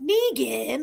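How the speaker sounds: playful, light, acted half-teasing tone. Retelling how Maggie said a name: imitating Maggie teasing. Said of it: "almost like a teasing kind of way".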